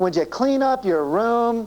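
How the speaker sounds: whining voice laced with disgust. Example of a parent asking their kid to do something: whining, disgusted tone. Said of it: "In order to whine like that".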